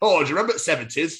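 put-on loud, high Northern accent, drag-act voice. Retelling what a drag act said outside: imitating a drag act in a northern accent. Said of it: "Why do a Northern accent again?".

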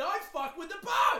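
furious very high angry shout. Speaker retells the guy on the boat answering the group's pleas, mock-angry outburst. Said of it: "So he's getting angry".

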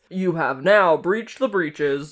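announcement-style voice. Riffing on a catchphrase, saying it in an announcement voice. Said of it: "It's like in an announcement voice".

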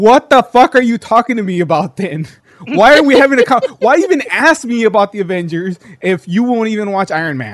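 exasperated yell, high and loud.

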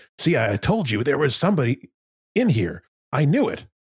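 high-pitched put-on character voice. Game master voicing the shorter of two figures, in a higher-pitched voice. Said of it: "So the shorter one that had the higher pitched voice earlier, / Manson appears to be a little more nimble. He does a back handspring coming out of the arc that you slammed him into, like a back handsp".

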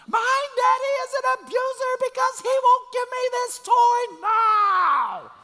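very high, very loud, shrill, slow, drawn-out tantrum scream. Describing a child's tantrum over a toy, imitating a screaming child. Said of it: "start screaming at the top of their lungs".

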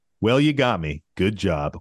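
sour, salty, begrudging sore-loser tone. Quoting an opponent after game one, imitating his salty tone. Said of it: "With the most saltiest tone".

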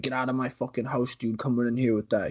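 put-on panicked, freaking-out outburst. Retelling a movie scene where everybody was freaking out: imitating someone freaking out. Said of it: "everybody was freaking out".

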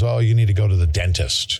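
usual speaking voice

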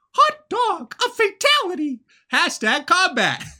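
very high cartoon mouse voice. Reading out response number four, in a Mickey voice. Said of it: "I was not prepared for [name] Mickey voice".

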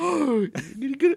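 mock very high, eager, thrilled excited voice. Retelling own reaction while watching a scene: imitating own excited reaction. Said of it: "And I'm excited watching this".

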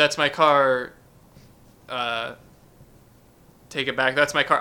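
plain

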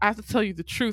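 ordinary delivery

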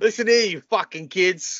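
put-on grumpy old man Boston accent. Pitching a bit where a character cusses out kids, grumpy old Boston accent. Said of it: "Grumpy old Bostonian".

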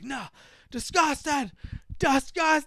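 imitated yelling. Retelling a friend's reaction to a movie scene: imitating someone yelling. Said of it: "He's just yelling".

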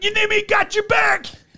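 acted very high, top-of-lungs, hyped-up yell. Retelling how a super fan kept yelling at a wrestler: imitating someone yelling. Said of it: "but he kept yelling it".

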